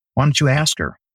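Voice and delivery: play-acted very calm, even delivery. Telling a story about someone's answer, retelling a very calm reply. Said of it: "very calmly and just says".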